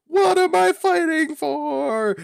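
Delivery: put-on video-game hero battle cry, very high, drawn out. Retelling a game scene where a character leaps out to attack, retelling Zero's yell. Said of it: "he literally yells like Zero".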